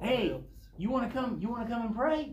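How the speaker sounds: mock encouraging tone. Retelling how a man invites the speaker to pray, imitating an encouraging tone. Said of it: "he says it so encouragingly".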